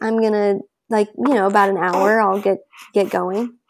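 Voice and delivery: ordinary delivery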